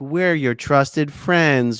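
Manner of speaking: mocking, fake hurt sincerity. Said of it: "someone who's trying to be like".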